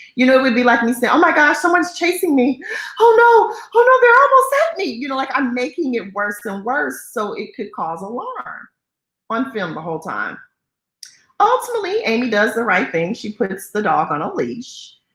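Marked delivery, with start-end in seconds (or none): 1.1-5.1 mock frantic panic, much higher and louder. Showing how a caller made her call sound, frantic and panicked. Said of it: "she makes it even more frantic sounding".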